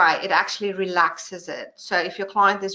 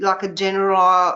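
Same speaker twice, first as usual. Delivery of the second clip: normal talking voice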